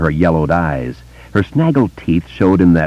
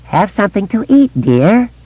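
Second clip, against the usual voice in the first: put-on very high, cracked and creaking old woman voice. Grinning at Beverly, she offers her something to eat in a high, cracked voice. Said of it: "Her voice had risen half an octave, but the octave was cracked".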